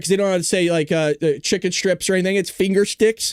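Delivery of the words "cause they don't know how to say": plain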